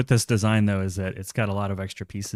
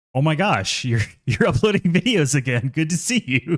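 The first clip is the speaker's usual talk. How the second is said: high, startled, surprised voice; 7 semitones higher, 5 dB louder than usual. Retelling a message from YouTube about uploading videos again: imitating a surprised message. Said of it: "it sounded surprised".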